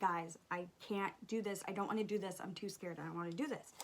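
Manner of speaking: put-on scared near-crying voice. Retelling begging friends in a haunted house: imitating being almost in tears. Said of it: "almost in tears".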